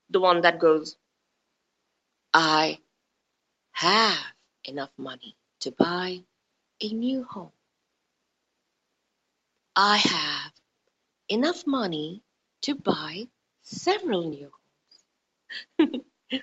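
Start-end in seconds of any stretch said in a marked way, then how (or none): 2.3-16.4 deliberate, low, slow coaching-style voice. Showing listeners how to say money affirmations, in affirmation voice. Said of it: "get into your affirmation voice".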